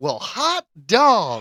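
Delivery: genuinely thrilled, high, loud, excited outburst. Showing another speaker how to read a headline: excited. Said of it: "you gotta be excited".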